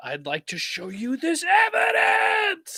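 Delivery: very loud, very high, shrill swooping anime scream. Recalling how he voiced the trial's high action points: Phoenix Wright anime scream.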